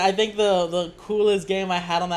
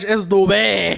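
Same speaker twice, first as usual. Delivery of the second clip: put-on French pronunciation; 7 dB louder than usual. Mocking a co-host's pronunciation correction, in a fake French accent. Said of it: "you have to make it sound French".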